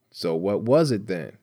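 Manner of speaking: ordinary delivery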